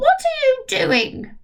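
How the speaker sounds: piercing, shrill voice pitched very high. Narrator reading a story, Grandma calling from the next room: shrill voice. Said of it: "Came the shrill voice from the next room".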